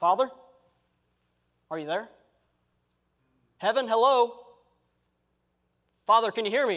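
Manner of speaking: tentative, uncertain, searching tone. Showing a prayer that calls out hoping heaven hears, inquisitive questioning tone. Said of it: "It's not an inquisitive tone".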